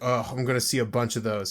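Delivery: sneering, dismissive, derogatory little tone. Imitating the other speaker's remark about cosplayers: imitating a derogatory tone. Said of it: "You said it with a derogatory tone".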